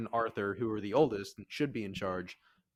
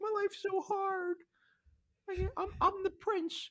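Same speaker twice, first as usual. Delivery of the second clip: put-on crybaby sobbing, very high and whiny. Retelling what the prince says after she wakes him, imitating someone crying. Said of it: "And then he starts crying like a little".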